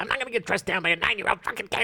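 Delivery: put-on gruff tough-guy voice. Acting out a denial in a skit about a finger bite: Joe Pesci impression. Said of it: "the best impression you've ever done".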